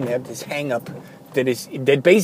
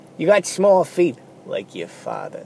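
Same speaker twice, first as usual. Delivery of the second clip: mock disgusted, condescending sneer. Retelling what a woman said to him, mock-sneering and condescending. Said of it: "she with a sneer, with a little disgust".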